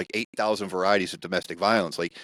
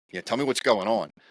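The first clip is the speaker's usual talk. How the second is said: normal talking voice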